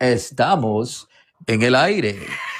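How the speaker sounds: slow, put-on radio ad announcer voice. Doing the ads and interludes in a fake commercial announcer voice. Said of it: "that good fake voice for commercials".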